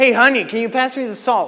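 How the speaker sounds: annoyed-sounding voice. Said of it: "You guys heard how I said that".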